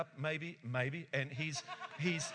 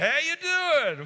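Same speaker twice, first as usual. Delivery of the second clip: very high-pitched, loud, cheerful, cheery tone; 10 semitones higher, 11 dB louder than usual. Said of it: "that countenance of a smile".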